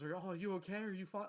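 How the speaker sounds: earnest, worried, genuinely concerned tone. Retelling the dad's reaction after a fall, imitating his concerned voice. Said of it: "he's like actually concerned".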